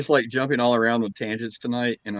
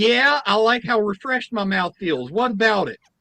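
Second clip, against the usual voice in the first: put-on little old lady voice, higher; 10 semitones higher than usual. Retelling what an old lady said in the dentist's room: imitating a little old lady. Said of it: "And the lady goes".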